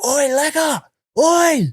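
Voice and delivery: put-on very high, loud hollering shout. Retelling calling out to a friend who is out of view: imitating his own shout. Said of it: "I'm shouting".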